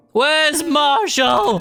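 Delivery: acted screaming. Chatting about game rage, quoting a woman who keeps screaming: retelling a scream. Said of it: "she just keeps screaming".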